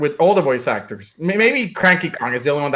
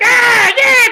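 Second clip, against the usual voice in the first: grating squeal, very high and very loud; 8 dB louder than usual. Describing a character's original voice: imitating Toad's grating voice. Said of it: "incredibly grating and annoying".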